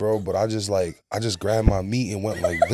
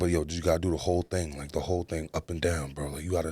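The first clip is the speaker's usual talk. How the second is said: put-on whisper, lower and quieter; 4 semitones lower, 7 dB quieter than usual. Retelling quietly showing a friend what to do: retelling a whisper.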